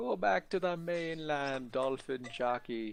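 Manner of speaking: slow, drawled, stretched-out put-on Jamaican accent. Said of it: "You kind of sound Jamaican there".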